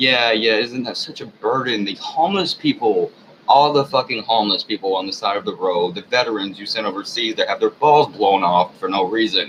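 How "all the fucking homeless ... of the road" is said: ordinary talk, nothing marked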